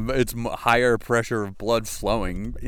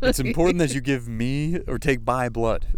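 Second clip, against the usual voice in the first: ordinary talk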